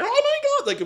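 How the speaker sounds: mock frantic, hysterical screaming, very high-pitched. Recounting a woman building mass hysteria on a phone call: retelling her scream. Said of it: "she was screaming like".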